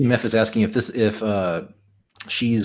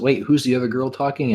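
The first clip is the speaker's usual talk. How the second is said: plain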